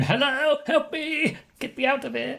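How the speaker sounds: very high, pleading goblin voice. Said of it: "saw the goblin in the box going".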